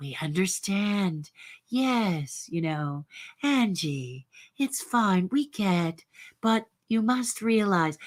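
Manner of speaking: acted slick, smarmy, patronizing tone, drawn-out yes. Imitating how someone speaks to a family member: imitating a smarmy voice. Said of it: "that smarmy voice".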